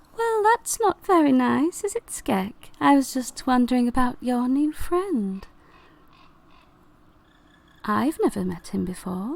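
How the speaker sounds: talking flower voice, swooping and sing-song. Voicing the flower Gloria after being told to shut up: talking flower character voice. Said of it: "she goes".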